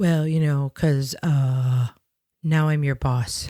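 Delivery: put-on wimpy, insecure tone. Retelling how a new boss opened a call: imitating a wimpy, insecure tone. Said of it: "so almost wimpy and insecure about it".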